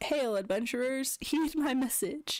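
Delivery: strange, weird voice calling out as from afar. The narrator voices a messenger calling to adventurers across a lake: weird messenger voice. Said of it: "y'all hear a weird voice calling out to you".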